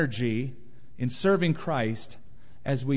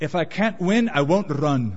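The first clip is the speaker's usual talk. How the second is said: put-on slow, raised Scottish accent; 5 dB louder than usual. Retelling a defeated athlete's words to his girlfriend, Scottish accent. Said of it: "in his fine Scottish accent".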